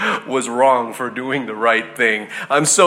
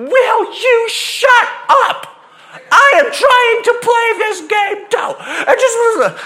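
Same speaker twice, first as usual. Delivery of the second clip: put-on very high, very slow, drawn-out shriek; 4 dB louder than usual. Retelling how a woman at a game screamed at a kid; retelling a woman's scream. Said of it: "screamed at the top of her lungs".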